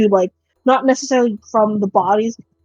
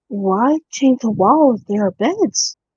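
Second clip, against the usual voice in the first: hushed whisper. Voicing a character who creeps in closer: whispering in character. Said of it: "she's kind of whispering".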